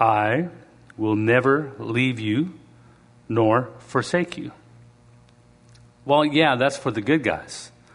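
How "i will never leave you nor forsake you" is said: solemn put-on sermon-style preaching voice. Rereading a Bible verse aloud in a scripture voice. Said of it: "Let me just read this again in my scripture voice".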